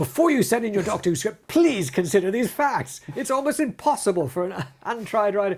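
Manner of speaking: furious loud high voice. Reading a doctor who script submission notice aloud in a really angry voice. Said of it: "this should be read in a really angry voice".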